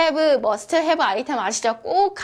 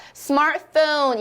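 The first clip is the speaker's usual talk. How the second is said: smartphone, weight on first part. Pronunciation lesson, saying the word aloud: stress on smart in smartphone. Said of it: "이렇게 앞에 강세를 받아서".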